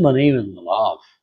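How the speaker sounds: deep, very low put-on British English accent. Imitating how a man who learned English from BBC first introduced himself: Malav's British accent. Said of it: "he used to speak like this".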